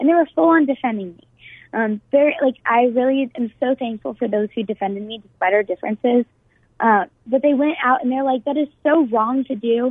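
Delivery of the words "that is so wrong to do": ordinary talk, nothing marked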